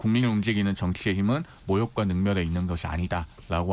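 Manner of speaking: ordinary delivery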